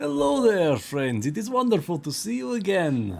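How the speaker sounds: put-on Russian accent. Voicing a man from the city who greets the group: Russian accent. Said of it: "A man with a very interesting accent".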